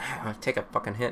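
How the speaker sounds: put-on mutter. Retelling what a man at the door said as they left, muttering under his breath. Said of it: "muttering under his breath".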